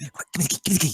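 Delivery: high, half-shouted stage whisper. Approaching the cage in character, calling for the key: stage whisper. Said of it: "stage whispering, which is, like, you know, whisper shouting".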